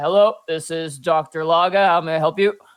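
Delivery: very deep, low, dropped-down voice. Narrator voices the one answering a player's phone call, very deep voice. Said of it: "you hear a very deep voice answer".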